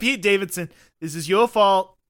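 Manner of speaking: unconvincing, failed attempt at a Staten Island accent. Imagining a celebrity blaming everyone for Honda, try a failed Pete Davidson Staten Island accent. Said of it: "trying to do a Staten Island accent".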